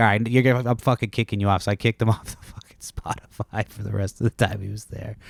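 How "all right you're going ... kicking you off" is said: mock-annoyed tone, faster pace. Recounting kicking a guest off the Spotify queue, retelling being annoyed. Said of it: "but I was kind of mad".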